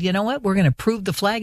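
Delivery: ordinary delivery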